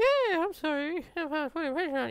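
very high, squeaky voice with swooping pitch. Mid-conversation, the speaker slips into a Mickey Mouse voice. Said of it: "I kind of broke into a Mickey Mouse voice then".

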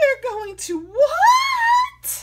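piercing, drawn-out scream, very high and very loud. Wilbur answers the old sheep's bad news: screamed. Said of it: "screamed Wilbur".

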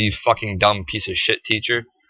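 put-on laughing while talking. Retelling mocking a teacher with friends in the office: imitating laughing while talking. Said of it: "We're just sitting there laughing, going".

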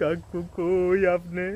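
slow, drawn-out fake weeping, mock crying.

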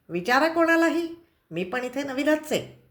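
irritable. The grandfather replies after getting a sharp answer, cranky. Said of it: "आजोबा तिरसटपणे म्हणाले".

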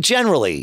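heavy stress on generally. Answering a question about a Mac and attached drives, stress on 'generally'. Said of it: "I will emphasize the word generally".

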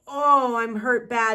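words groaned out, loud and drawn-out. Narrator reading a man's spoken line from a story: groaned. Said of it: "he groaned".

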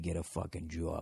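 put-on soft Boston accent, muttered and grumbled to oneself. Speaker coaching listeners who are working on their boston accents, boston accent. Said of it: "for those of you working on your Boston accents".

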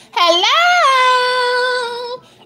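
very high, drawn-out, loud, over-the-top put-on voice. Describing her personality on the channel: imitating Q's loud over-the-top greeting. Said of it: "it was just very loud and very over the top".

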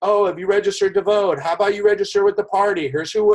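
mock hollered voice, high screaming pitch. Retelling party advocates at the exit doors urging voter registration: imitating people screaming. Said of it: "they were literally screaming, like".

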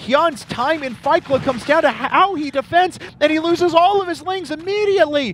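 high, loud, hyped-up shout.

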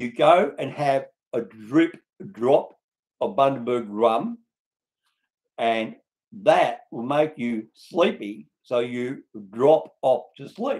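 spelled out very slowly, careful, word by word. Repeating the explanation for non-english speaking countries, said again slowly. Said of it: "I'll say it again slowly".

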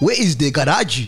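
put-on speaking in a Ghanaian accent.

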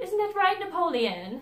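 bad, shrill, very high mid-Atlantic accent. Mocking a wig shop lady character, in a horrible mid-Atlantic accent. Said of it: "this horrible, like, mid-Atlantic accent".

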